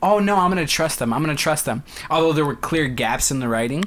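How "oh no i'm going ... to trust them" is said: ordinary talk, nothing marked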